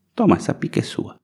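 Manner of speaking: small, breathy voice, close to a whisper. Retelling what the governor said, little voice imitating Fleury. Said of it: "Falou com essa vozinha".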